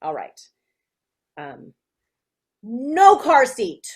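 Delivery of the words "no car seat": put-on very loud, high, angry child voice. Reading a child's statement before a parent's reply, mad child voice. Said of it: "You sound mad".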